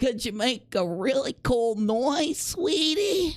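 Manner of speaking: high woman's voice, done spot-on. Mimicking her asking for a noise, do a spot-on impression of a woman. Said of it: "it's I'm so spot on".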